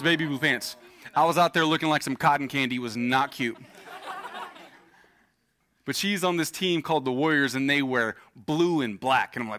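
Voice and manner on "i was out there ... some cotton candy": ordinary talk, nothing marked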